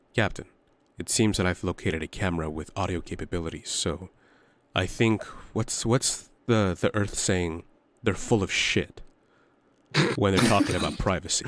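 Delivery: hushed whisper under the breath. Retelling turning away from a camera to report to the captain; whispering to the captain. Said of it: "I'm whispering this".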